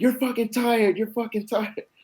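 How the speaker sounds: very high, piercing, shrill scream. Retelling the coach screaming in front of him: imitating a coach screaming. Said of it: "he starts screaming".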